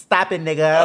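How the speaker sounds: very sweet, gentle voice. Retelling how he said a line real sweet: imitating someone saying it sweetly. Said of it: "He said it real sweet".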